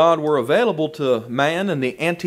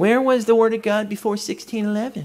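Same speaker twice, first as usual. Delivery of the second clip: put-on snide smart-aleck voice, pitched up; 5 semitones higher than usual. Speaker imitates people challenging the King James Bible, mocking snide tone. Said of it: "they say it so snidely".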